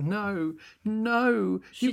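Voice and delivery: put-on sobbing girl voice. Retelling a film scene to another speaker, imitating Dorothy sobbing. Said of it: "Dorothy's, like, sobbing".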